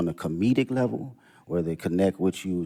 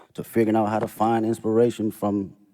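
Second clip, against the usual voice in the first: ordinary talk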